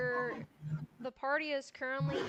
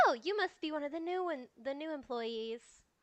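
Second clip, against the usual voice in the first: thrilled, excited, eager tone; 3 semitones higher than usual. Voicing the warden greeting new employees at her door: excited warden greeting. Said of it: "claps her hands in excitement and says".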